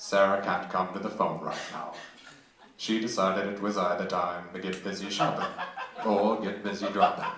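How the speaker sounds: low, deep, polished recorded-message delivery. Recording a voicemail greeting for a friend: Morgan Freeman voice. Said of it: "can you do a Morgan Freeman voicemail".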